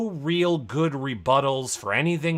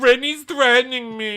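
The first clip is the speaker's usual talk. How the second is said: mock whiny complaining voice, higher and louder; 9 semitones higher, 6 dB louder than usual. Repeating the imitation after being asked to do the face. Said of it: "Do the face when you do that".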